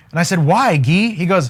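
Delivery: ordinary talk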